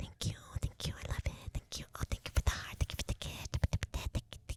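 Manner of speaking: mock soft ASMR-style whispering. Imitating ASMR videos that thank viewers for gifts: imitating an ASMR whisperer. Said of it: "I hate the whisper ones".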